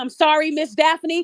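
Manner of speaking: put-on tearful crying voice. Retelling how a girl called this morning to apologize: imitating someone crying. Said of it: "when she called me this morning crying".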